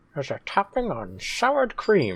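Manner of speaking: put-on old-timey filtered voice. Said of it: "you put on the old-timey filter all of a sudden".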